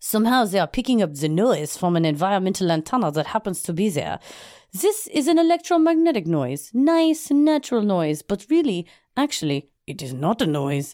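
put-on French accent. Reading a physics professor's quote aloud in a put-on French accent. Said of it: "I gotta practice my French accent".

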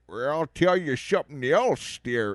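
put-on insane-sounding, weird, odd old man character voice. Telling someone about Hell or High Water, show the lead's voice with an insane Jeff Bridges voice. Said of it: "his voice in this thing is insane".

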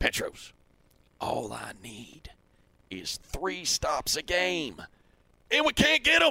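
slow, swooping, thick Texas drawl laid on heavily. Retelling what a defensive coordinator said to a radio partner: imitating thick Texas accent. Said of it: "in his thick Texas accent".

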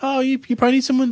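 put-on helpful, girly college girl voice, chirped up high. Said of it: "I bump into this girl".

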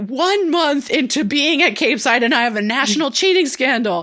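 loud yell. Recapping a TV episode where the principal yells at students in his office, imitating Principal Green yelling.

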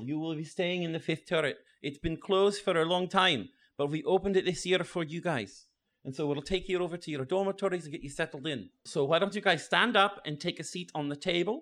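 put-on Scottish accent. Speaking at the front to the first years before the sorting, in a scottish accent. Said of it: "the Scottish one talking in the front. Yeah. Like, I'm trying to do a Scottish accent talking in the front. ... I'm trying to do a Scottish accent talking in the front".

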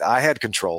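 put-on deadpan tone. Quoting a player's post-game answer about the pass, retelling a deadpan reply. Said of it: "And he was just deadpan".

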